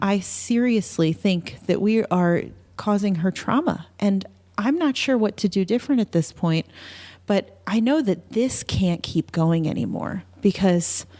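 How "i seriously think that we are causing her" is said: plain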